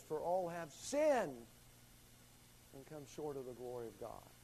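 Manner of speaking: "sinned" given heavy stress.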